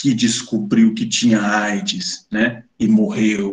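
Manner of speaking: deep, grave announcer voiceover voice. Recounting a scene with stereotyped characters, voicing its narration in a deep voice. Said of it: "aí dá uma voz grave".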